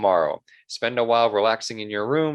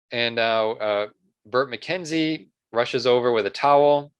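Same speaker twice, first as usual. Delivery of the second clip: ordinary delivery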